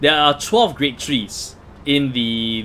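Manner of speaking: very slow, deliberate delivery.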